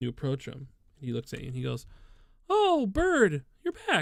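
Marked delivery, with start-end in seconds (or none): 2.5-4.0 very high, slow, swooping, drawn-out sing-song squeak. Speaker imitates a lieutenant greeting him on his return, in a high-pitched voice. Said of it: "he's got like a really high pitched voice".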